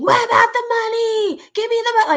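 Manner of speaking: very high, shrill, screamed delivery. Retelling how a mom screamed on a live stream, imitating her screaming. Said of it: "her mom was screaming".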